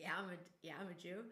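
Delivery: ordinary talk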